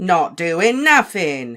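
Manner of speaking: very loud, swooping, cackling sing-song. Narrating a reply to a professor's order, cackling as Peeves. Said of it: "cackled Peeves".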